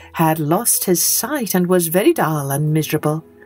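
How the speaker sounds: ordinary delivery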